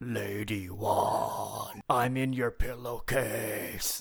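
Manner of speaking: ghostly voice, very slow and drawn out throughout. Doing a best impression of a voice heard on a recording: impression of the ghost voice heard. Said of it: "your best impression of what that voice".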